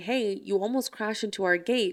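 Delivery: ordinary delivery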